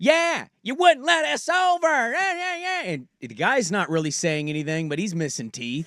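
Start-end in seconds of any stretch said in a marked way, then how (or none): 0.0-2.8 mock very high-pitched hollering, screaming rant. Retelling a road rage argument with a driver, imitating a woman screaming. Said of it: "She's just screaming at me".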